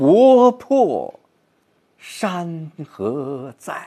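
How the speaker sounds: 国破 loud and high, 山河在 very slow, aching.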